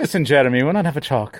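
terrible, clumsy put-on Irish brogue. Acting out a European mafia member asking for a talk, in a terrible Irish accent. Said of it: "That's a terrible Irish accent".

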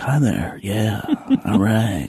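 slow, calm radio announcer voice. Showing how they sound when they get on the phone, in a calm radio voice. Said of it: "the calm radio voice".

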